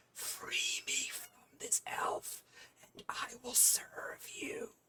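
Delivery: slow, hushed whisper under the breath. Voicing an invisible stalker leaning close to a player: whispering under its breath. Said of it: "whispers underneath its breath".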